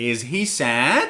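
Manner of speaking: pitch climbs upward on "sad". Yes-no question example in an intonation lesson: rising intonation on sad. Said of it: "your tone of voice goes higher at the end of the sentence".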